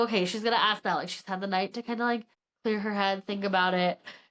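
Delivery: ordinary talk, nothing marked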